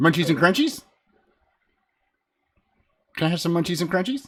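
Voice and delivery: voice of a tiny fey creature. Voicing a little creature asking a player for treats: little fey creature voice. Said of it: "you see this little creature, it looks at you and goes".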